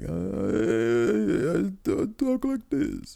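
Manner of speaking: very high, very slow, swooping, creaky vampire voice. Imitating the host who looks like an old man: Larry David impression sounding like Dracula. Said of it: "that sounded like Dracula".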